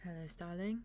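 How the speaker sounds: soft quiet voice. Voicing a character who bows and softly greets another: soft-spoken greeting. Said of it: "just softly is like".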